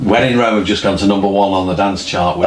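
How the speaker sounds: usual speaking voice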